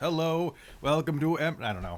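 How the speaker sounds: talking like a robot. Greeting the chat in the program's talk-like-a-robot portion, robot voice. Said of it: "talk to the chat like a robot".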